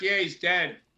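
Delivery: acted-out making-fun, mocking, teasing tone. Retelling how others were making fun of you: imitating mocking teasing. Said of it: "they were making fun of me".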